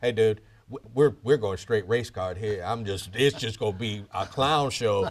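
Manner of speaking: secretive, soft, hushed half-whisper. Retelling what a defense attorney said to him: imitating a half-whisper. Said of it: "just whispered in my ear".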